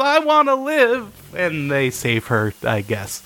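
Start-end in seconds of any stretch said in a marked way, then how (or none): 0.0-1.1 very high-pitched sobbing yell. Recapping an episode, retelling how she cries and yells in an imitated crying yell. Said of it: "She cries and yells".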